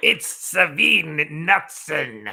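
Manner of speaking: goofy put-on creature voice. Reading a viewer's chat message aloud, in a Jar Jar Binks voice. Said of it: "as Jar Jar Binks would say".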